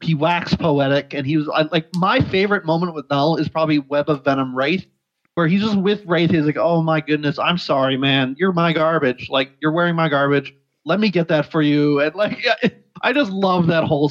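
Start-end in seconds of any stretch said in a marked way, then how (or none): 6.6-12.0 put-on polite, apologetic character voice. Fan acts out a favorite scene where Null speaks to Wraith, in Null's polite apology voice. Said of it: "apologizing and just being all really polite".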